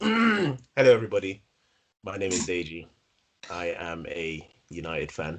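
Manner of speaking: sounding unhappy. Introducing himself to everyone on the show, in an unhappy voice. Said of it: "hear in my voice, I'm not very happy".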